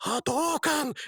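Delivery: very high, squeaky, fired-off call. Retelling a fight as a video game: Street Fighter special-move call. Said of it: "going all Street Fighter".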